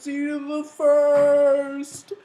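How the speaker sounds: mock very high, dramatic crying, first word drawn out. Retelling running from an explosion, leaving a friend behind; acting out tearful farewell. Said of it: "I'm running and I'm crying".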